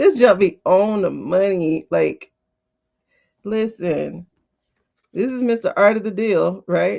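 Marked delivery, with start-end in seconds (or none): 5.1-7.0 heavy, very sarcastic delivery. Reading a tarot spread, naming the figure the cards show; sarcastic. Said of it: "And I say that very sarcastically".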